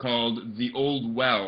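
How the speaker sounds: ordinary delivery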